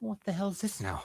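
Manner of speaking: very high, pitched-way-up character voice. Voicing Gary, who turns and sees the two intruders: Gary character voice. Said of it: "he turns around and sees the two of you and goes".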